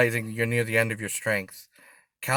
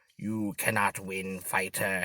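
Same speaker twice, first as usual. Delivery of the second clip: soft, menacing hissed evil wizard voice; 3 semitones lower, 7 dB quieter than usual. Narrator reads an enemy pinning the fighter's wrists, face inches away: hissing. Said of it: "he hisses".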